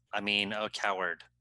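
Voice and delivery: ordinary talk, nothing marked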